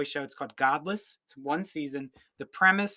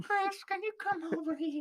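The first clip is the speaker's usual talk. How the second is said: put-on creepy old-man voice, much higher pitch; 6 dB quieter than usual. After comparing someone to the Family Guy grandpa, doing Herbert from Family Guy voice. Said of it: "Herbert the pervert".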